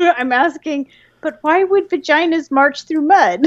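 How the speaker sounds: high-pitched, giggling, laughing through the words. Speaker asks a question aloud about an odd phrase, laughing while talking. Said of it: "but I can't stop laughing".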